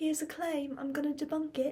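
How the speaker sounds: bad, poorly done put-on British accent. Repeating a claim-debunking line after first saying it, in a bad british accent. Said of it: "I sure do have a bad British accent".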